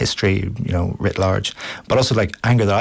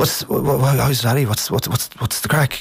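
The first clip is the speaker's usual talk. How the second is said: put-on stammering, high-pitched, on the verge of crying; 5 semitones higher than usual. Retelling asking a brother about a sick father: imitating a near-tears stammer. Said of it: "ready to burst out crying".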